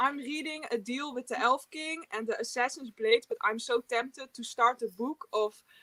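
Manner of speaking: put-on Dutch accent in English. Showing the group how Dutch people speak English, in a Dutch accent. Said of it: "This is the Dutch accent".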